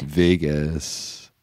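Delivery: deliberately deepened, low, drawn-out voice. Trying out the same line in different voices, lower voice. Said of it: "Do you want to hear it in a lower voice?".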